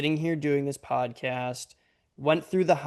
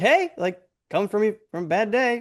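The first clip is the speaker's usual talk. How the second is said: play-acted, super upbeat, chipper, high, excited cheer; 7 semitones higher, 6 dB louder than usual. Telling Paige how she sounds even on a bad day: imitating Paige, mock-chipper. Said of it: "you still sound like the most chipper, like excited Paige ever".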